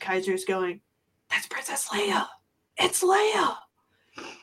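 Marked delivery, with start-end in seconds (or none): 1.3-3.6 put-on high, breathless whisper in awe, kid voice. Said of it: "under his breath".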